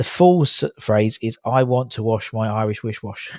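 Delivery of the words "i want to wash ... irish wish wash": normal talking voice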